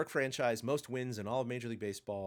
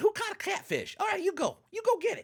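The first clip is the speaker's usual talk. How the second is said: bad put-on coach voice, cracking, higher and louder; 6 dB louder than usual. Imagining a former player managing the team: horrible Will Clark impression. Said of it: "really horrible impression there".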